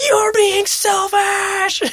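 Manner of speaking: put-on high, slow, drawn-out whiny kid shout.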